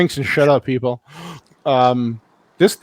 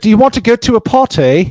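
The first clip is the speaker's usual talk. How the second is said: clumsy, bad put-on British accent, pitched up; 6 semitones higher, 3 dB louder than usual. Quoting a character in a film scene, bad female british accent. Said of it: "That's a bad British accent".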